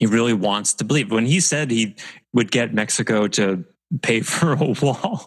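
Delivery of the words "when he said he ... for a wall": rising pitch, laughing through the words. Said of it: "I can't even say it without laughing".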